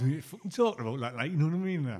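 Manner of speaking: sweary, fake Geordie accent. Teasing someone about how they swear when doing Geordie, Geordie accent. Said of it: "There you go. That's what you do".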